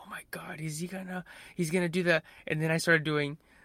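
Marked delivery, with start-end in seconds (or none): 0.0-2.2 soft, hushed, under-the-breath whisper. Retelling what a friend whispered during a scene: imitating someone whispering. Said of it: "she whispered something like".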